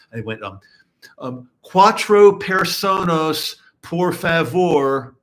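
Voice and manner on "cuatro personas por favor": very slow, loud, bad mangled Spanish accent. Retelling a friend ordering at a Spanish restaurant: imitating a bad Spanish accent. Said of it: "that sounded really, really bad".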